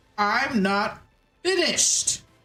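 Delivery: big echoing call out from far off. Narrating as the players open the library door, a voice yells: big echoey yell. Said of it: "yelling from across the library in a very big, echoey voice".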